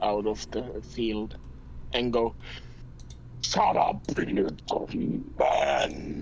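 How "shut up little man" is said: very low, deep, slow, echoing voice. A voice from the field silences a screaming noble, booming voice. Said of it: "A booming voice will will reverberate".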